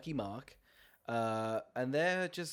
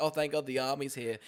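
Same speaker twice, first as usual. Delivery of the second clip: usual speaking voice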